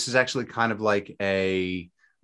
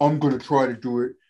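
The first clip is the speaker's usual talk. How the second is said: voice used for talking to a dog; 3 semitones higher than usual. Discussing an ultra race goal while talking to the dog; dog-talk voice. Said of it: "I'm talking to my dog. That's why the voice".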